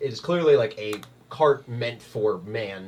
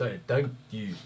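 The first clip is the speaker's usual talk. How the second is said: imitated Eastern European accent; 4 dB quieter than usual. Imitating a man they know, the speaker says thanks in an Eastern European accent. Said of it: "Hey, what the fuck was that?".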